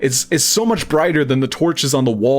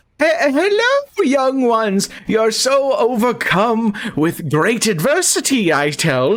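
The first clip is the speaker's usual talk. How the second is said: put-on very slow, drawn-out, high old woman voice; 9 semitones higher than usual. A game master voices an old woman greeting the players: old woman character voice. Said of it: "you see this hunched old woman with a very blank expression standing in front of a door in the very back of / you see this hunched old woman with a very blank expression standing in front of a door in".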